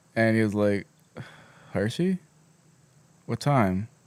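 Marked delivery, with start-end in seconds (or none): 1.8-3.9 sleepy, drowsy, half-awake voice. Retelling a phone call to a friend who answered: imitating Matt sounding sleepy. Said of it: "he sounded, like, sleepy".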